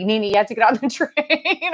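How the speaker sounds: acted-out loud yelling, calling out. Retelling being called from the train: imitating Darren yelling. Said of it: "he's yelling for me from the train".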